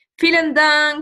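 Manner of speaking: normal talking voice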